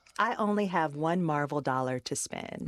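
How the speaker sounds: normal talking voice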